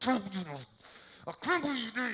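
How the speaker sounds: acted anger through clenched teeth. Retelling keeping it together while mad at someone in a restaurant: retelling talking through teeth. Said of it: "I'm talking to him through my teeth".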